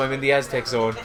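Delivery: plain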